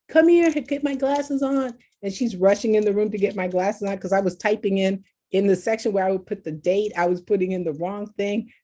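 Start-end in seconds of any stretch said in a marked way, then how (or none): 0.1-1.7 high, loud screaming at full voice. Retelling calling a caregiver to put on glasses: retelling own screaming. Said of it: "I'm screaming".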